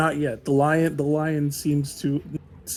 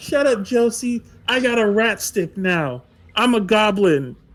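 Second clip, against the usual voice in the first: put-on high, defiant child's hollering shout; 7 semitones higher, 4 dB louder than usual. Game master voicing Billy answering Josie, Billy yelling back. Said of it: "Billy just yells back".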